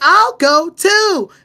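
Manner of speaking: high-pitched, stiff, dub-like delivery with odd pauses. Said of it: "And Dawn would be like".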